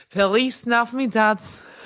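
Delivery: put-on Manchester or Liverpool accent. Recalling a Christmas meme, the speaker quotes it in a Manchester or Liverpool accent. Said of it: "done in a Manchester or is it a Liverpool accent".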